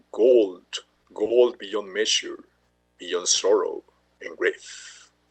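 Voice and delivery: deep, very slow, regal kingly dwarf voice. Showing a video, quoting the dwarf king from The Hobbit: dwarf king voice. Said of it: "voy a poner voz de rey".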